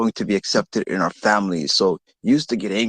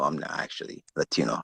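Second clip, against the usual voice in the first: usual speaking voice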